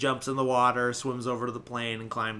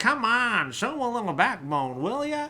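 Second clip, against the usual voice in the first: put-on loud, high, old-timey New York accent; 12 semitones higher, 5 dB louder than usual. Quoting the character Jock, whose actor's accent keeps switching, old-timey New York accent. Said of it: "old timey New York accent".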